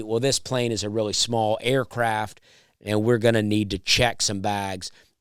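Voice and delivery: plain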